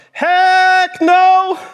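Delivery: very high, shrill, loud shout. Retelling how he shouted back at mama without lifting his head: retelling a shout. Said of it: "he shouts".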